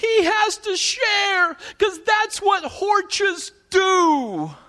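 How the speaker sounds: put-on very high little-kid voice, "do" stretched out. Retelling what his little boy finally said, in a three-year-old's voice. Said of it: "in his 3-year-old voice say".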